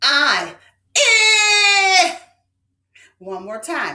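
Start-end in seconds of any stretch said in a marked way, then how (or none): 0.0-2.2 loud, long, stretched-out "eh" sound. Speaker models a sound for listeners to repeat: stretched drawn-out vowel. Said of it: "Stretch it with me".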